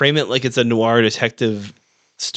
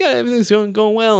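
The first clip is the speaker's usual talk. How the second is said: put-on sweet, polite cowboy voice, higher; 10 semitones higher, 4 dB louder than usual. Retelling how the cowboy Hobie talked to Mannix on the phone: imitating Hobie being sweet. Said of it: "He was real complimentary, just real sweet".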